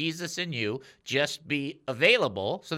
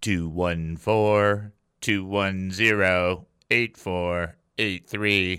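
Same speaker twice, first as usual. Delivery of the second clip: robotic voice, much lower in pitch; 7 semitones lower, 5 dB louder than usual. Host repeating the show's text number, in a robotic voice. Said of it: "Very robotic".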